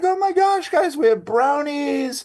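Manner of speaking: very high, thrilled, excited teacher voice. Retelling how she announces brownies to the class, imitating Denise, all excited. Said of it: "she gets all excited and is like".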